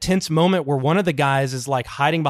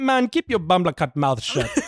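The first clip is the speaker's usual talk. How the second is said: put-on Jamaican-accented movie villain voice. Retelling a Predator Two scene, imitating Willy One Blood. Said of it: "He goes".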